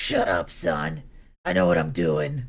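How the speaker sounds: thick, raspy, heavy-smoking mom voice. Acting out a phone call, answering as the mom: thick smoker mom voice. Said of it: "That voice is sounding a little thick".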